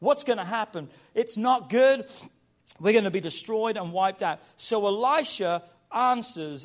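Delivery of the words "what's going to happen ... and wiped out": ordinary talk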